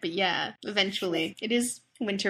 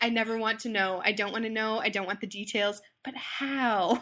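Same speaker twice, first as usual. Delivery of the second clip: ordinary delivery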